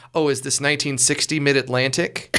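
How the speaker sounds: ordinary delivery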